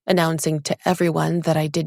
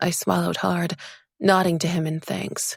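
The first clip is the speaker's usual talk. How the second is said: ordinary delivery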